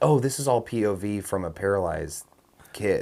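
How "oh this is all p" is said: usual speaking voice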